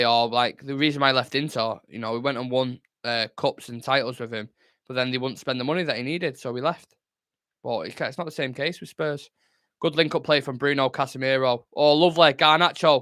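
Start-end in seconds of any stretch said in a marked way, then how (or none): none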